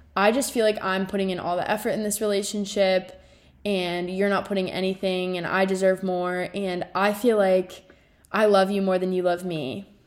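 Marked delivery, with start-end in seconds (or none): none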